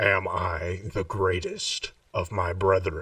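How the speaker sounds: bottom-of-the-chest deep, dropped voice. The narrator voices a woman addressing the group, in a deep voice. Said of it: "in that deep voice, she says".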